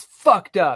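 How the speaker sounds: angry, fed-up, pissed-off male voice. Retelling a man's reaction on the phone, acting out a pissed-off man. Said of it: "he is pissed".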